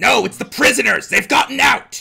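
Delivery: very high, creaky, rough goblin voice. Player speaking in character as a goblin, goblin voice. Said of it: "still trying to be a goblin".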